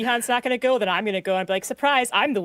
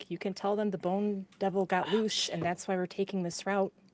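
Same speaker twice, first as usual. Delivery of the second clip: hushed, secretive, half-whispered quiet voice; 3 semitones lower, 8 dB quieter than usual. Half-whispering in character to another figure during a tense standoff: half-whispering to another character. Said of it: "I whisper to him".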